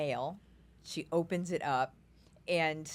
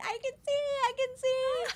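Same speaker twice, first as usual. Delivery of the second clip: play-acted, very high, squealing child's scream. Retelling a kid running around the house: imitating a kid screaming. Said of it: "screaming at the top of her lungs".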